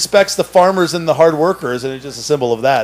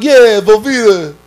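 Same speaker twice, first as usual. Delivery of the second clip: put-on speech impediment, dropped r sounds, higher, louder; 6 semitones higher, 5 dB louder than usual. Retelling a guy with a speech impediment talking: imitating a speech impediment, no R. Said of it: "they can't say the R".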